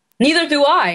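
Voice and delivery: forced, put-on anger. Trying the line once more after being asked: trying to sound angry. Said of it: "I'm trying to get angry".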